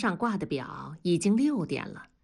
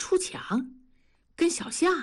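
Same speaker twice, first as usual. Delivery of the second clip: surprised, astonished, disbelieving, questioning tone; 9 semitones higher than usual. A comrade hears a warning that his wife might stray, surprised. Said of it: "同志惊讶地说道".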